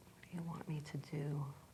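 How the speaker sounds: very soft whisper, as if to oneself.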